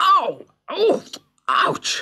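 very high yelps and cries of pain. Unable to break loose and hit by a shower of tiny arrows, he cries out in pain. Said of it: "cried Gulliver as the arrows hit him".

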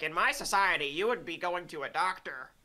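put-on creepy elf voice. Retelling a guest's remark from an online debate: creepy little elf voice imitating Nick Fuentes. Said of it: "creepy little elf voice".

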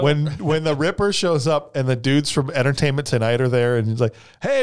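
ordinary talk

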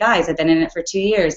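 ordinary delivery

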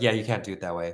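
put-on flat delivery. Recapping a film scene where Isabelle answers a woman, imitating Isabelle's deadpan. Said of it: "She just deadpan".

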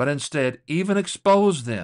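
"instead" and "even" stressed, loud and high.

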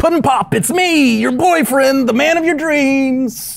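very high, beside-himself, gushing, freaking-out excitement. Dr. Hextable's Puddin Pop has come to life: Dr. Hextable freaking out excitedly. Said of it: "he's just freaking out with excitement".

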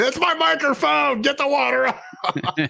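very high, dragged-out, drawn-out yell. Imagining the producer yelling about water on the microphone: imitating a producer yelling. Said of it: "producer dude yelling at me".

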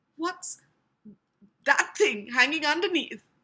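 faintly quivering voice. Edging toward a message daubed on the wall, with a slight quiver in voice. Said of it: "Said Ron in a slight quiver in his voice".

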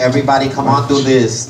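usual speaking voice

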